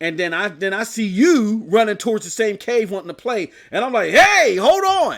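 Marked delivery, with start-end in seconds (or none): 4.1-5.2 raised, high, agitated, worked-up call. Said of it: "I said I wasn't gonna get worked up".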